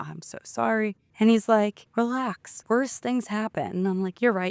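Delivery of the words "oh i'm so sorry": play-acted weepy, tearful speech broken by sobs. Speaker recalling apologizing over and over at the police station, retelling a sobbing apology. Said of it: "sobbing in the police station".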